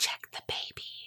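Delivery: low, deep, barely voiced near-whisper. Retelling a story of a voice heard over a baby monitor, deep whispery voice. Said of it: "he hears a deep voice come over the baby monitor and say".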